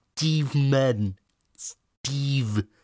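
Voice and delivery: high, strained, effortful voice. Praising a film scene, the speaker repeats its line, strained DiCaprio impression. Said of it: "so angestrengt und wie er ihn immer nachahmt".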